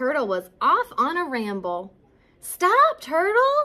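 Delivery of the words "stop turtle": very high, loud, urgent cry. Skunk calls after Turtle, who is off on a ramble, crying out. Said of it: "cried Skunk".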